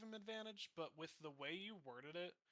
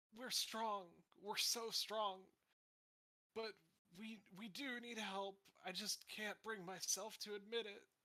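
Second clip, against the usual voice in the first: tearful, crying, sobbing, pleading delivery; 4 semitones higher, 4 dB louder than usual. Acting out a sobbing man looking up at you, tearful sobbing plea. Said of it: "look up at you tearfully and say".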